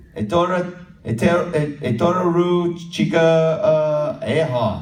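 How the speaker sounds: slow, high-pitched, halting Maori, sounded out.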